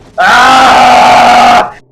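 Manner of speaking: one high, loud scream.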